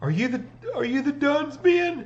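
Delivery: very high, near-tearful voice, on the verge of tears. Acting a character in the scene as she calms down, almost crying. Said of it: "she almost starts crying".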